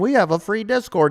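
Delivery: play-acted, high little-kid yell. Mimicking what little kids out there are yelling: imitating kids yelling. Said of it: "all the little kids out there are yelling".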